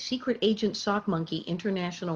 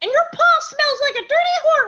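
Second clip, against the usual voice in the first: high, raised put-on nasal character voice; 12 dB louder than usual. Recalling growing up together and the voice used back then: put-on nasal voice. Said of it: "somewhere up here in the nasal thing".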